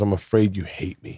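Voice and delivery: put-on sobbing man's voice. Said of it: "And he's sobbing".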